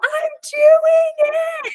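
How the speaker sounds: very high, thrilled, excited squealing scream. Recalling shouting to her husband outside at six in the morning, retelling her own scream. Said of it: "But I'm screaming about".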